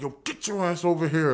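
acted-out urgent, bossy screaming voice. Telling a story about pulling a guy back by the stage, retelling a scream. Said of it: "So I'm screaming at him like".

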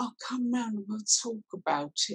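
soft, high, wet, sympathetic voice. Speaker imitates what a friend says after a bad breakup, imitating a friend's wet voice. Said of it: "they always have that voice".

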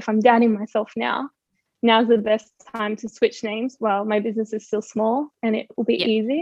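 ordinary talk, nothing marked

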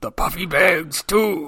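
slow, drawn-out pirate captain voice, read aloud. Repeating the other speaker's pirate line back: imitating a pirate voice. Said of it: "I love the voice you read that in".

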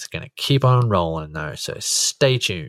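slightly aggressive, low tone. Closing a segment for the audience, a little bit aggressive. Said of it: "That sounded a little bit aggressive".

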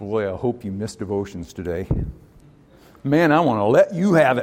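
put-on mean god-in-the-sky voice. Acting out a mean god in the sky: put-on meanie god voice. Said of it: "meanie God sitting in the sky saying".

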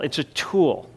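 tool stressed with a falling tune.

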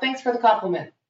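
plain

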